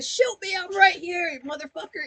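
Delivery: high-pitched, goading, taunting yell. Retelling how Manny yells at Rank while held back: imitating Manny yelling. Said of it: "he's yelling up at Rankin".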